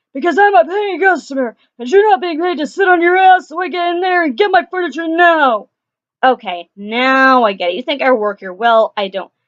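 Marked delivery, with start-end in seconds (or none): 0.2-5.7 high, barking, demanding yell. Retelling a customer's answer to being asked why he yells: imitating a man yelling. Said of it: "why are you yelling at me?".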